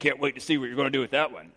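snarky, wisecracking smart-aleck tone. Retelling what somebody says at each genealogy: imitating a smart aleck tone. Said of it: "kind of in a smart aleck tone".

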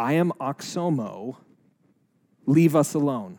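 mock rough, gravelly voice. Retelling a woman whose body contorts as a voice speaks, imitating a horrible gravelly voice. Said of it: "she gets this really gravelly voice".

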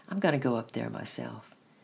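ordinary delivery

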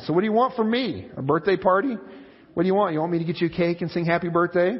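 mean, belittling, nasty, scornful tone. Retelling a friend's reply to a woman in a diner: imitating a nasty tone. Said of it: "Her friend replied in a nasty tone".

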